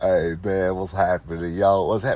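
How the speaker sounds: put-on deep, dropped voice. Imitating how a certain set of men talk, in a deep, slow voice. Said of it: "They talk in this deep, slow voice".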